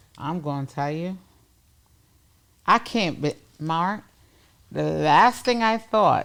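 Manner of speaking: voice catching, emotional, close to tearing up. Telling Mark his words got you emotional, teared up. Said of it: "getting me tor- teared up".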